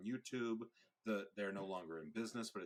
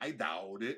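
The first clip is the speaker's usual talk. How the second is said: put-on thick Boston accent, louder; 6 dB louder than usual. Imitating an old furniture ad catchphrase: Dean's thick Massachusetts accent. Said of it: "he had the thickest Massachusetts accent ever".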